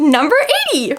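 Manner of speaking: very high, squeaky voice with nervous excitement. Announcing the number for the last book being chosen: very squeaky voice. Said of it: "That was a very squeaky voice".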